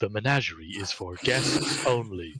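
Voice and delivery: faintly otherworldly, slightly unearthly golem voice. Voicing a golem that spots an intruder: slightly unearthly golem voice. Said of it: "in its slightly unearthly voice".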